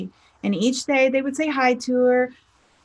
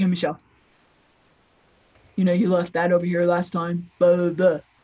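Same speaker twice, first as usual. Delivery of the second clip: low, flat, same-every-time deadpan, sounding annoyed; 6 semitones lower than usual. Speaker imitates a man who always sounds the same; imitating his flat monotone. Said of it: "He talks like this".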